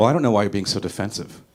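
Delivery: faux-reasonable, needling, passive-aggressive tone. Doing an impression of a passive-aggressive district attorney, mock passive-aggressive. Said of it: "passive aggressive district attorney".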